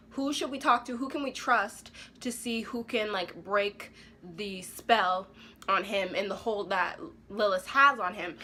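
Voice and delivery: ordinary delivery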